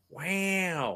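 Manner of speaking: slow, stretched, lingering wow. Listing impressions they can do, says wow as an Owen Wilson impression. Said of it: "I can do an Owen Wilson".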